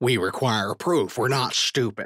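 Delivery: snarling creature voice. Reading a story, voicing the first Xalorian demanding proof from Bennie, snarling. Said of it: "The first Xalorian snarls".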